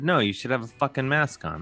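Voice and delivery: imitated angry voice. Retelling own retort to an unmasked man at a desk: angry retort. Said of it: "Did you lean into it like you just did?".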